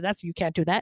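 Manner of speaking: ordinary talk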